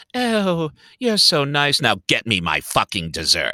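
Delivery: swooping, mood-swinging, sweet turning vicious, mercurial voice. Describing the queen in a show, imitating her mercurial manner. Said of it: "this very, m-, um, mercurial sort of".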